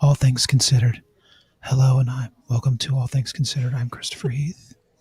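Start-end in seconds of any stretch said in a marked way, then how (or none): 1.6-4.7 put-on soft public-radio host voice. Opening a news segment, asked to speak like on NPR: put-on quiet NPR voice. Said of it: "Quietly, quietly, like we're on N P R".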